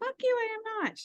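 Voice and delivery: mock very high, furious angry tone. Retelling a retort after feedback from a group member: imitating own angry retort. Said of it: "swear words mad".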